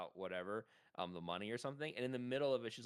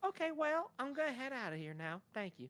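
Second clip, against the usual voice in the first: very high-pitched cartoon kid voice. Retelling how a woman said goodbye and left; Butters-like South Park voice. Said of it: "dude's like a South Park character".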